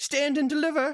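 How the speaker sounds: very high, tiny little mouse creature voice. Narrating a scene, voicing a creature who confronts the listeners: high-pitched voice. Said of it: "in sort of a, a high pitched voice".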